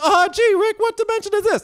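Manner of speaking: very high, squeaky character voice. Acting out a cartoon character arriving in a new dimension: Morty impression. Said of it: "That's my Morty".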